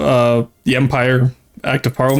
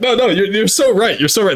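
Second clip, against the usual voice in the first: high voice, talking through hard laughter; 8 semitones higher than usual. Answering chat's joke while laughing hard: laughing hard while talking. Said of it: "That's why I'm laughing so hard".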